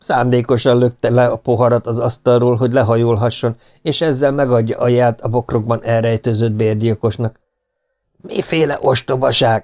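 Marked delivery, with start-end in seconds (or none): 8.2-9.6 sudden, sharp snapping delivery. A man accused of plotting a murder dismisses the claim, snapping. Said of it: "Csattant fel Herradura".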